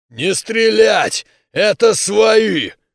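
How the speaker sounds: eerie, loud, tomb-like growl. Reading a story aloud, voicing a man who raises his hand: eerie, grave-like growl. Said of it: "словно могильным голосом, прорычал".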